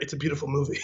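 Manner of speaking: very hushed, soft, confiding half-whisper. Retelling a movie scene where a character leans in: imitating a half-whisper. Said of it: "leans in and whispers in his ear".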